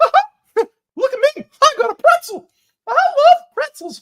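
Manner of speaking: tiny, very high, loud mouse voice. Imagining what the mouse said about its pretzel: voicing a mouse. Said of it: "did the mouse go".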